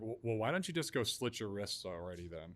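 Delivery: acted-out offhand, dismissive, nonchalant, super sarcastic tone. Retelling how she answered after looking at the message, in a mock super-sarcastic retort. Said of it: "super sarcastic".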